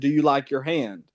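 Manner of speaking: put-on very polite tone. Retelling what the new site safety manager said: imitating a very polite tone. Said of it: "in a very p-, uh, polite way".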